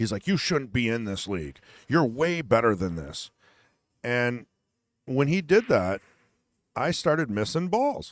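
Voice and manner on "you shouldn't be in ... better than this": sore, aggrieved, angry, upset grumble. Retelling what a pool league opponent said during a match, mock-angry, upset complaint. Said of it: "He's upset with me. He's angry".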